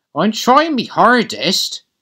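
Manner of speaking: very high-pitched delivery. Toby answers Gordon as Gordon puffs past, retorting. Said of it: "retorted Toby".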